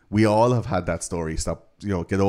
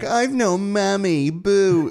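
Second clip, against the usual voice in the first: mock very high, slow, drawn-out whiny moan; 13 semitones higher, 3 dB louder than usual. Acting out an adoptee at a group after a moany remark: mock moaning voice. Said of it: "these moany, moany adoptees".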